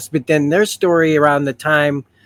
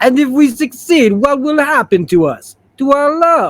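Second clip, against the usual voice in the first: cartoon character voice, pitched very high; 10 semitones higher, 4 dB louder than usual. Performing a scene from the animated series, Colossus voice. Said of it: "I'm gonna do Colossus' voice from the animated series".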